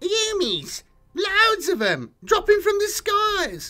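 very high, terrified, panicked blurting. A grot, threatened with having its head bitten off, blurted out. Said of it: "it blurted".

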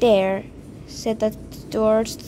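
ordinary talk

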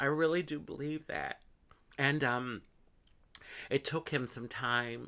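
emotional, on the verge of crying. Talking about a father's support, getting emotional, near tears. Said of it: "I'm such a crybaby".

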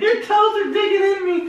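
high, laughing yelp.

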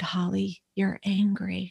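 understated, plain, low-key delivery. Retelling what the therapist told her: imitating someone speaking quietly. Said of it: "she just really quietly said".

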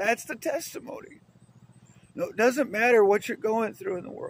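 voice full of feeling. Giving a religious testimony to listeners, the speaker gets emotional. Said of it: "I get a little emotional".

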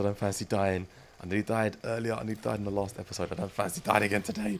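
plain speaking voice, a little uneasy and nervous. Mid-game, talking to the audience after a frame rate drop; nervous. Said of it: "I'm a little bit nervous".

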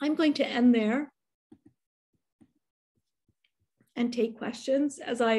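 voice giving out, fading. Ending a talk to take questions, voice giving out. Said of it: "my voice is going out on me".

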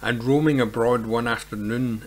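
ordinary delivery

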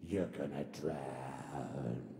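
dramatic narrator voice, very low, very slow. Voicing what your enemy will say to you, in a deep voiceover voice. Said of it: "it's usually in a deep voiceover voice".

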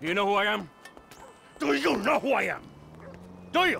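menacing, threatening tone.

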